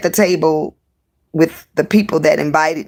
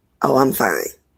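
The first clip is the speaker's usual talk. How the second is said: mock nonchalant, offhand, couldn't-care-less tone; 3 semitones lower than usual. Retelling a coworker's cold reply to a greeting: imitating someone nonchalant. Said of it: "All nonchalant".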